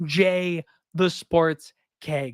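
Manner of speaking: slow, deliberate, spelled-out delivery.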